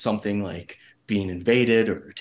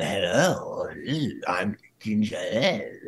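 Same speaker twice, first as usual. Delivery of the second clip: slow, over-the-top hammy voice with lots of tongue. Showing how a puppet character talks, Ginger Dead Man voice. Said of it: "he talks like this, and he has lots of tongue".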